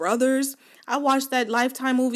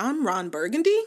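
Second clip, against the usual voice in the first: rising, question-like intonation on Burgundy. Retelling a name read with a question mark: rising at end of "burgundy". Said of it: "someone put his name and then put a question mark after it".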